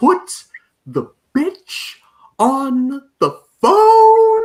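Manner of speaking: very high, very loud, very slow swooping sing-song. Retelling a movie phone call line in Bill Cosby's voice. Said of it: "in Bill Cosby's voice".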